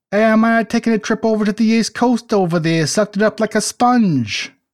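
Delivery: put-on New Jersey accent. Joking with the group about a trip east, in a put-on New Jersey accent. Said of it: "That's exactly how they sound in New Jersey".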